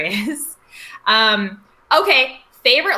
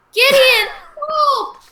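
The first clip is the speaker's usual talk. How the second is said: mock panicked yelling, higher. Retelling a scene where a kid cries out to Gideon: imitating a panicked cry for help. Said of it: "now act panicked, say help".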